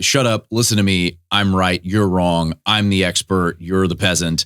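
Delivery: plain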